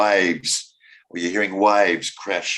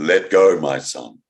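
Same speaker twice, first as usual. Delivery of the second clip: booming, deep, very slow, drawn-out voice from above; 5 semitones lower, 3 dB louder than usual. Telling a joke, answering a desperate plea for help as God, in a big deep voice. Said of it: "this big, deep voice comes back from the heavens".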